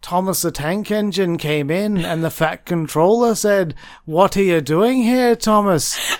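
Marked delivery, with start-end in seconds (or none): 4.0-6.0 loud Liverpool Scouse accent. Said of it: "Which is my Beatles accent".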